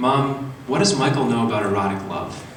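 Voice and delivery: plain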